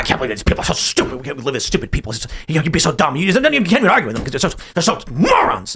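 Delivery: spluttering, sputtering grumble muttered under the breath. Retelling how a man at the table reacted to his answer, imitating sputtering and muttering. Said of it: "started just sputtering and muttering".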